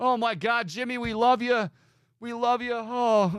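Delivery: high-pitched, tearful, blubbering bawling. Mocking a tearful speech to Jimmy: imitating Sherrone Moore crying. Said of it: "Sherrone, why are you crying?".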